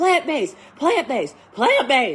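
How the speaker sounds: mock high-pitched yelling. Retelling how the herbalist scolded her about eating meat, imitating high-pitched screaming. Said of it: "Screaming at me in Chinese, really high-pitched".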